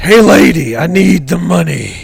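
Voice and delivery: very loud, rough, gruff tough-guy meathead voice. Approaching a short lady to get a bag, in a put-on meat voice. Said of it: "I gotta put on my meat voice".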